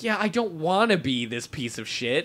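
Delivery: normal talking voice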